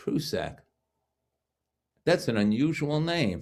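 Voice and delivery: put-on very heavy, drawn-out, swooping New York accent. Retelling what a man at the next table said about his name, thick New York accent. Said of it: "in the most New York accent I had ever heard".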